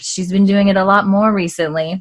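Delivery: ordinary delivery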